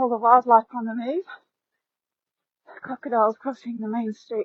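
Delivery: catching breath. Showing viewers a bay and beach, stopping to catch breath, out of breath. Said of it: "Just catch my breath".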